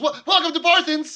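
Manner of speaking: startled, stammering blurt, very high and very loud. Voicing a young shop boy woken by hooves on the floor: startled, just woken up. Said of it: "jolts up straight and says".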